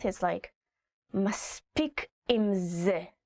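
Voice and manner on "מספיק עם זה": through clenched teeth, much slower. Explaining a phrase parents say to children, speaker demonstrates it through gritted teeth. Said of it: "you also kind of say it through your teeth".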